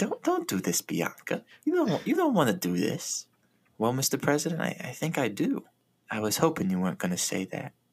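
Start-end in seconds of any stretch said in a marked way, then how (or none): 0.0-3.2 put-on friendly-sounding menacing voice, higher, slower. Retelling a scene they found creepy, imitating a friendly-sounding mean voice. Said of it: "really friendly sounding voice being really mean".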